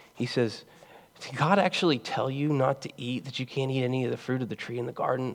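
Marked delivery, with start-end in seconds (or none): 1.2-5.4 acted, very quiet, hushed, sneering laughing voice. Preaching about the serpent's cynicism in the garden, voicing the serpent, mock-laughing. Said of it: "Like with this laughter in his voice".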